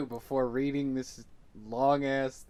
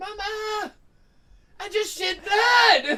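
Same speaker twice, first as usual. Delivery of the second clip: put-on very high, very loud, very slow little-kid voice; 10 dB louder than usual. Imagining a kid running out of a bathroom: imitating a kid. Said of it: "a kid running out of his bathroom and going".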